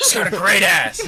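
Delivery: shrill, very loud yell, bellowed high and hard. Quoting a movie line in a yelling impression: Al Pacino impression yelling. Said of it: "Impressions of Robert, of, uh, Al Pacino".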